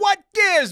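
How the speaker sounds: high, fast whining.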